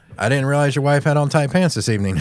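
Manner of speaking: normal talking voice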